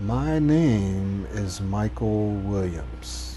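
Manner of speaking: almost slow motion, very slow, a word stretched. Saying your name after a deep breath, very slow, almost slow motion. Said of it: "nice and slow, almost in slow motion".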